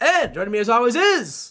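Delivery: high, yelled, big announcer-style build-up shout. Showing the dramatic pause in the show intro: yelling a show intro. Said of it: "Why are you yelling?".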